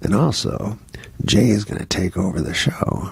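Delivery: quiet, confidential whisper. The speaker acts out what a man whispered to him, whispered. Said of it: "whispers it to me".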